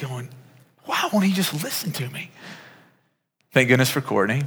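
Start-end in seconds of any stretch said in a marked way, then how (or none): 0.9-2.3 soft, pitched-up, mock exasperated and frustrated wondering. Recalling standing over a boy who fell and wouldn't listen, retelling own frustration. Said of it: "but I'm just frustrated".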